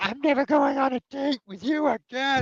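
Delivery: angry, furious screamed outburst, very high-pitched. Voicing a date who screams at a hero: Natalie screaming angrily. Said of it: "Natalie comes up and screams at you".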